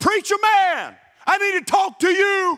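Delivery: high, drawn-out, top-of-the-lungs holler. Preacher retelling a man hollering at him across a grocery store: imitating someone hollering. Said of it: "hollering out at the top of his lungs".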